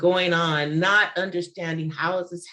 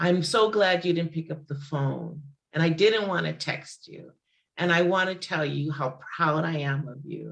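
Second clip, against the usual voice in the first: mock tearful voice, as if speaking through tears. Retelling a voice message from the speaker's mother: imitating someone speaking tearfully. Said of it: "And tearfully, she says".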